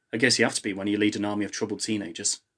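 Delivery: ordinary delivery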